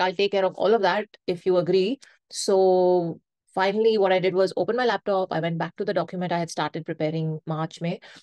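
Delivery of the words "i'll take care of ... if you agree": ordinary delivery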